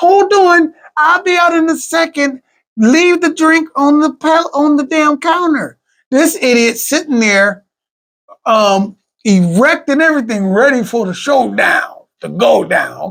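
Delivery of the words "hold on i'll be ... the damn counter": put-on high young girl's voice. Retelling a story where a girl's voice calls out to someone waiting, little girl voice. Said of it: "the little girl's voice they have on premises saying".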